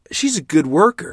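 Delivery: very loud, high-pitched, defensive tone. During a late-night kitchen quarrel, the father answers the mother: defensive. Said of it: "my father replied defensively".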